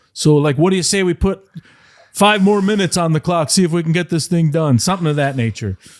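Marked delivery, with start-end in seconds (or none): 0.1-4.7 put-on pitched-up Canadian accent. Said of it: "in his, like, Canadian accent".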